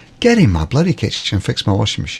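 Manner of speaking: ordinary talk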